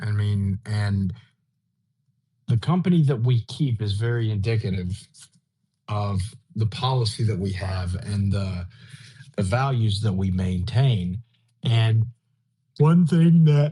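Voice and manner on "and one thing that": raised, pitched-up words spoken through a yawn. Speaker resumes a point after waiting to speak again, yawning while speaking. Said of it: "pardon me for yawning".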